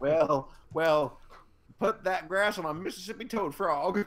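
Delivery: put-on Southern US accent over a Canadian voice. Joining in joking about bad Southern accents: mock Southern accent. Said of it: "Canadians can't do southern accents".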